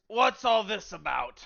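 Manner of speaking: rough, gruff, demanding voice. Voicing a character in a performed scene, in a gruff voice. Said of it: "you're gonna hear a gruff voice".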